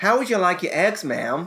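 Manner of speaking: imitated American accent. Retelling a restaurant waiter asking about eggs: imitating an american waiter's accent. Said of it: "I'm not gonna do the accent".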